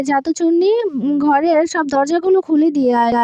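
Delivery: ordinary delivery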